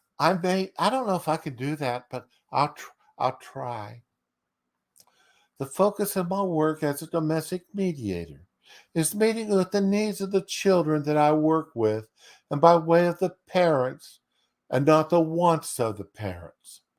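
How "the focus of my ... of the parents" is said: put-on lispy, soft-spoken, higher voice. Reading out a domestic mediator's debate question from notes, in a put-on lispy, soft-spoken soy boy tone. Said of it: "you got to put this in that lispy, soft-spoken soy boy tone".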